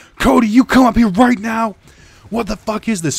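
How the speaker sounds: mock-screaming in anger. Retelling how they yelled at the kid, retelling an angry scream. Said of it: "Screaming at the top of their lungs".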